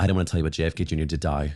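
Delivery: put-on New York accent. Recounting his mother telling him news after he gets back from camp; put-on new york mom voice. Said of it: "that's my voice for her".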